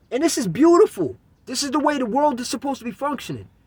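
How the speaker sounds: high, hyper, overexcited voice pushing against welling tears. Describing small children learning to serve customers, hyper voice fighting tears. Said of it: "I got the hyperness in my voice right now because I'm starting to tear up inside".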